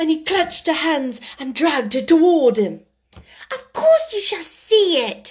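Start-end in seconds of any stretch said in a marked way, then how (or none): 3.5-5.3 sharp, offended, indignant snap, pitched up. Reading a story, she answers a man who clutched her hands, snapping indignantly. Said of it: "she snapped indignantly".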